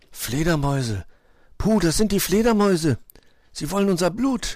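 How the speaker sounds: anxious, on edge. Narrator reads a character who has just heard a triumphant shriek, audibly nervous. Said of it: "sagte Wuschel hörbar nervös".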